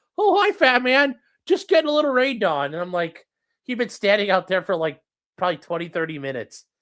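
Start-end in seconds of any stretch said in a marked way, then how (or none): 0.2-2.8 very high, raised, little pet dog voice. Telling how the dog stood in the rain, voicing the dog Clyde.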